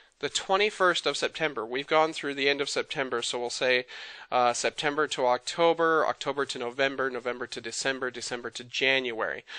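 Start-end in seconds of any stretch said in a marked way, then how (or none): 0.2-1.6 twenty-first given main weight. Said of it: "I wanna kinda highlight this date".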